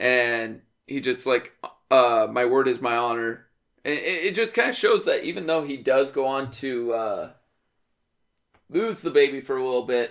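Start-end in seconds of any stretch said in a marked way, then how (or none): none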